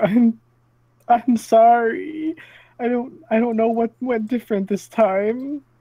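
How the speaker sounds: very high, stumbling, sniffly voice, cracking. Player in a tabletop game speaking to the shaman, voice cracking, sniffly. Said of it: "my voice is cracking and everything".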